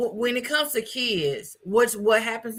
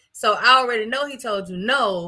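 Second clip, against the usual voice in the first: ordinary delivery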